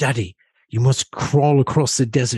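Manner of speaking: put-on British accent throughout. Speaker voicing Oliver while taking him for a walk: Oliver in a British accent. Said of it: "I give him a British accent".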